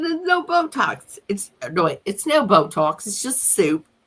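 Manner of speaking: slow, failed put-on New Zealand accent drifting British. Quoting what a man said, in a failed new zealand accent that comes out too british. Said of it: "that sounded too British. That wasn't New Zealand".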